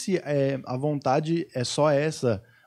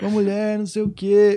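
mock angry shouting, higher and louder; 6 semitones higher, 5 dB louder than usual. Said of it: "Aí começou a gritar que a gente".

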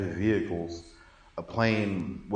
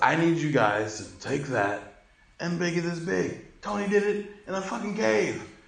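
mock very high, climbing shouted yell; 10 semitones higher than usual. Retelling a movie scene where the villain yells at engineers: imitating Obadiah yelling. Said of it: "He's yelling at the engineers".

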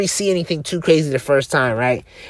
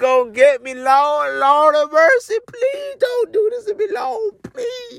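mock, very high, tearful, sobbing pleading tone. Retelling a frightened prayer during a trip: retelling a crying plea. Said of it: "I'm literally crying".

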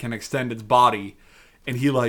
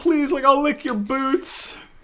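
mock desperate, hard pleading, pitched higher; 14 semitones higher than usual. Retelling how a cornered villain starts hard begging for his life: imitating hard begging. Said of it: "the fucking hard begging".

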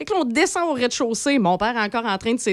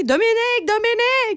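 very high shouting; 11 semitones higher than usual. Retelling how he shouted after a girl running down the hallway, mock-yelling a name. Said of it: "il criait après".

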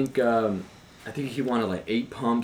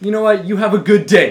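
put-on furious, very loud, very high, shrill, aggressive shout; 11 semitones higher, 14 dB louder than usual. Retelling snapping back at a rude customer: imitating an aggressive angry tone. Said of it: "very aggressive and angry".

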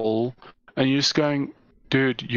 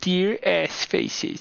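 high, creaky, whiny voice; 6 semitones higher than usual. Mocking old emails from internet complainers, imitating a whiny person. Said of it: "the best impression of a whiny person".

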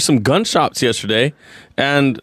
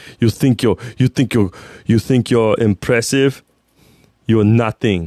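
put-on Austrian bodybuilder voice, lower; 5 semitones lower than usual. Doing an impression lecturing kids about supplements: Arnold Schwarzenegger impression. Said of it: "This is Arnold Schwarzenegger talking about supplements".

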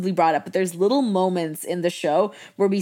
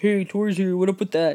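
put-on generic boy voice. Retelling a TV scene where Tori puts on her generic boy voice. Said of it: "that's just my generic boy voice".

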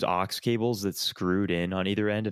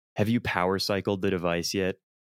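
normal talking voice

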